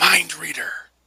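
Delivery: mumbled aside, under the breath. Remarking in character under their breath: muttered under breath. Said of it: "Under my breath".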